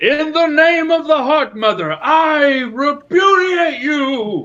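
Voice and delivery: grand, drawn-out, very high, very loud, very slow. Voicing a character who loves theatrics, coming in: theatrical proclamation as Draven. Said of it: "Draven loves the theatrics, so he comes in, he's like".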